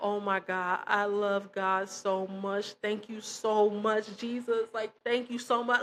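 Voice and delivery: play-acted tearful weeping with overwhelming joy. Recalling a man who was set free, imitating someone crying. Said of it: "seeing him like crying".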